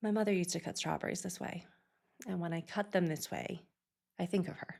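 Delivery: totally calm, soft, almost meditative voice. Retelling a father's answer about cutting strawberries, imitating a calm, meditative tone. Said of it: "totally calm, almost meditative".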